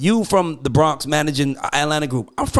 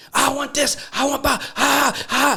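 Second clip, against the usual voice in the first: put-on very high, very slow, drawn-out scream; 10 semitones higher than usual. Acting out how one person makes demands, imitating someone screaming. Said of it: "He could be screaming".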